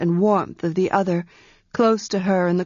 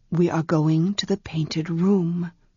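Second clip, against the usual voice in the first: quiet, soft, hushed voice; 3 semitones lower than usual. A voice in the darkness answering a confused woman, quiet. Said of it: "the quiet voice said in the darkness".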